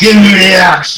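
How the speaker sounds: high, in-character put-on shout. Voicing Gumgar chasing the party for his axe: in-character shout. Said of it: "hear Gumgar shouting".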